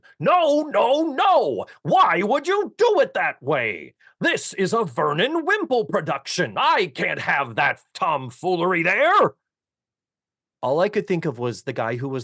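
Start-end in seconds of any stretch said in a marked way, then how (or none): 0.2-9.4 high, drawn-out director screaming. Describing a theater run-through, the speaker imitates a screaming director. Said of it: "the director starts screaming".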